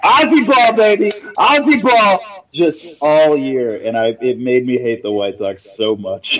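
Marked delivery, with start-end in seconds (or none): 0.0-2.5 shrill, very high, loud screaming cheer. Retelling how a college roommate would scream on the couch: imitating roommate screaming. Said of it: "he would sit there and he would scream".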